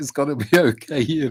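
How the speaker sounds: put-on emotional, soothing tone, near crying, tearful. Retelling comforting a hurt child at the car: imitating own tearful comforting. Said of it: "I was very emotional".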